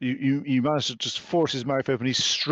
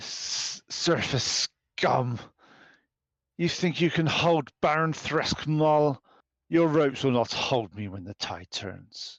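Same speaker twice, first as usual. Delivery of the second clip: put-on very thick, laid-on common accent. Narrating a game scene, a captive wakes and speaks, in a thick common accent. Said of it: "He talks in a very thick, common accent".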